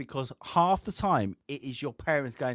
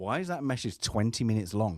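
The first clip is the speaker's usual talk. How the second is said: ordinary talk, nothing marked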